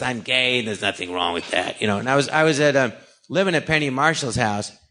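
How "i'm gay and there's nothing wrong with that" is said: low, deep, confident Broadway performer delivery. Retelling how Harvey Fierstein talked: Harvey Fierstein impression. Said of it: "he goes".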